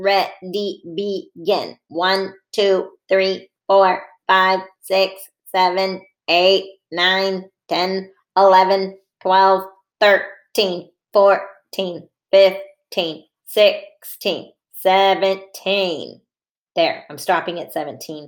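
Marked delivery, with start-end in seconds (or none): 1.9-16.2 robotic voice, much slower. Leading listeners in counting to seventeen together: robot voice. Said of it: "let's count to 17 in our robot voices".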